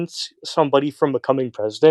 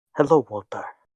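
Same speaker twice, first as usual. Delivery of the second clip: bad put-on Spanish accent; 2 semitones lower, 3 dB quieter than usual. Imitating a character as Gus: Meta Knight bad Spanish accent. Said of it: "Meta Knight has a really bad Spanish accent".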